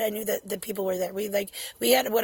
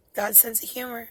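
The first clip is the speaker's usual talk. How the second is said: usual speaking voice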